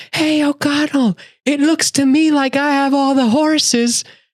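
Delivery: very high, slow, shrill, drawn-out taunting scream. Retelling a movie scene where a bad guy yells at Rick: imitating a scream. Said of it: "he screams".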